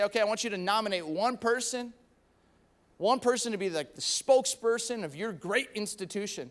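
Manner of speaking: normal talking voice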